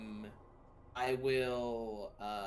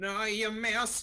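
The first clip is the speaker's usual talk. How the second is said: very high, loud, menacing and ominous voice; 10 semitones higher, 6 dB louder than usual. Casting cutting words while invisible: ominous voice. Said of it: "this ominous voice says".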